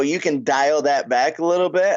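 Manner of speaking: normal talking voice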